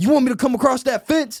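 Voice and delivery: very high, loud, shrill yell. Retelling how someone right behind him shouted in his ear, retelling a shout. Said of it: "just shouts".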